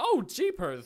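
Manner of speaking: ridiculous cartoony voice, very high, shrill and loud. Showing the range of a character demo: ridiculous cartoony voice. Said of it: "ridiculous cartoony stuff".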